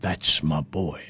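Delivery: soft, quiet, bad cartoon bulldog voice. Quiz host recalling Spike talking to his little son, bad Spike the bulldog impression. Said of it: "That was a bad impression".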